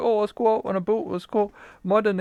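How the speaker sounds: imitated Canadian accent. Imitating how Canadians talk about going mudding: Canadian accent. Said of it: "the Canadian accents, like".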